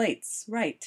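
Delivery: ordinary delivery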